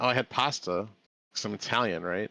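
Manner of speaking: ordinary talk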